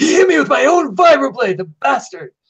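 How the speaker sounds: very high, loud screaming outburst. Voicing a character who screams after being cut: screaming in character. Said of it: "and Smoke screams".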